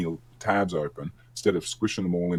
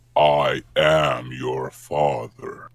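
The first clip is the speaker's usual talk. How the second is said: deep, booming, very slow, every word drawn out; 4 semitones lower, 6 dB louder than usual. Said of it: "that's actually a very good impression".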